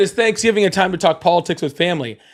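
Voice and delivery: ordinary talk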